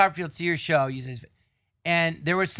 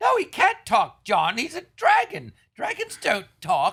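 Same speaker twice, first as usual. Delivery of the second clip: put-on sing-song English accent, pitched up; 7 semitones higher, 3 dB louder than usual. Imitating the other speaker's praise of a dragon act: english accent. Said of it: "apparently this one does with an English accent".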